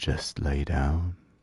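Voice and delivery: eerie, soft, hushed half-whisper. Narrator voicing the apartment speaking to the listener, half-whispering. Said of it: "the apartment whispers to you".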